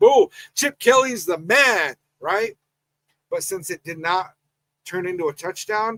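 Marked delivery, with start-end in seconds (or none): 0.0-1.9 mock pumped-up, high, excited screaming. Describing the imagined reaction to a touchdown while watching TV: retelling an excited scream. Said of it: "I would have been in here screaming".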